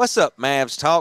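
friendly, put-on Louisiana accent. Imitating the coach greeting the postgame show guy: Avery Johnson Cajun accent. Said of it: "he had that Cajun accent".

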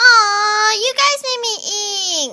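very loud, high cartoon voice, "me" stretched out. Running through a list of joke impressions, the speaker does an impression of ink. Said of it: "Ink impression".

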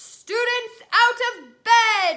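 booming, shrill, very loud, high-pitched bellow. Narrator reads Peeves' line after Ron swipes at him, bellowed. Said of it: "Peeves bellowed".

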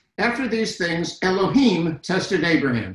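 ordinary delivery

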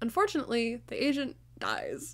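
swooping pitch, stifling laughter. Recapping a film plot, the speaker reads a line while trying not to laugh. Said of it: "I can't say it without laughing".

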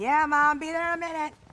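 soft croaky voice.

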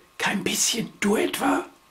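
hushed soft whisper, kept small. Reading a story, one of two in bed at night answers the other, whispered. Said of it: "flüsterte Wischel".

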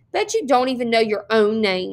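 ordinary delivery, nothing marked

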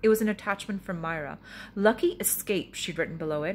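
plain

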